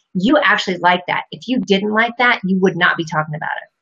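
ordinary delivery

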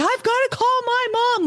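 put-on thrilled squeal, very high, excited gush. Retelling mom's reaction to her son's feat: imitating excited mom. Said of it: "she gets so excited".

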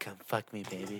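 very quiet, low, hushed whisper, close in. Joking about Tom Cruise whispering come-ons, whispering Tom Cruise impression. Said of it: "whispering at me saying".

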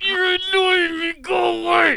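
through clenched teeth, very high, very loud, shrill. Retelling how his wife answered him: mimicking speaking through gritted teeth. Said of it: "She gritted her teeth and said".

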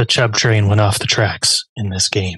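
put-on, deliberately deepened, very low voice. Recapping a player's game, the line said in a put-on deep voice. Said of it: "Why did you say it with such like a deep voice?".

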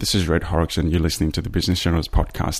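ordinary talk

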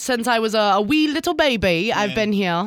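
sudden switch into a put-on English accent. Radio morning show host answers a co-host about living here for life; english accent. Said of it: "you break into an English accent".

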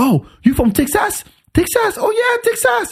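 very high, rising, excited gushing.

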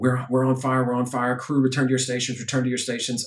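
put-on panicked announcer tone. Recounting a flight attendant's announcement over the speaker as the plane burned; retelling a panicked announcement. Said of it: "you could hear the panic in her voice".

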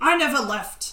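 very loud, high, grumbling voice. Game narrator voicing a reply to an old elf on a ladder, grumbly voice. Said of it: "your grumbly voice replies".

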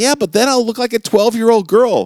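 feigned woman's voice, pitched way up. Quoting a man's reply, in a feigned lady's voice. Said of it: "he feigns a lady's voice".

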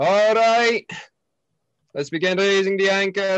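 very high, loud yelled call. Voicing a first mate calling to raise the anchor: first mate yelling out. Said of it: "yell out".

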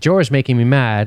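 plain

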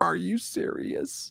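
play-acted sugary-sweet, soft, breathy, hushed nicest voice. Retelling how a guy answered someone's threats, in the nicest voice. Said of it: "in the nicest voice".

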